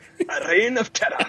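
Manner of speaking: very high, rolled Rs in reign and terror. Quoting a line from the movie, rolling every single R: Claude Rains voice rolling Rs. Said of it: "Rolling every single R".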